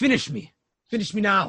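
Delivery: worn-down, defeated, beaten, all fight gone. Voicing a beaten figure lying on the ground: defeated. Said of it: "he looks defeat".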